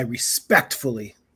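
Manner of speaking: respectfully given heavy stress. Retelling a defendant's comment in court: imitating stress on RESPECTFULLY. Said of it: "he put a big emphasis on respectfully".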